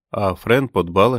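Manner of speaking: ordinary talk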